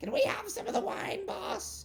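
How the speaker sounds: squeaky little goblin voice, very high pitched. Voicing a goblin speaking to its boss: goblin voice. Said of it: "this goblin will go".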